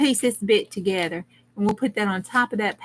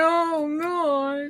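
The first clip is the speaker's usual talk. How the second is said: put-on crying voice, boo-hooing, higher pitch; 7 semitones higher than usual. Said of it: "I was crying".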